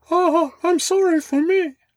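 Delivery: very high, drawn-out squeak. Joking about what a cartoon character says in couples therapy: Mickey Mouse voice. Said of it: "But he says it like".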